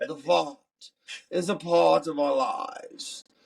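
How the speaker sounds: put-on speaking in a British accent. Announcing something to everybody, in a british accent. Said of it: "I'm gonna do it in my British accent".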